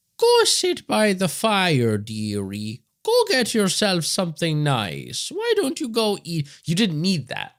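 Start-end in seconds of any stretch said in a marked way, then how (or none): 0.2-6.5 high, slow, mock sweet granny voice. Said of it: "the whole bullshit of".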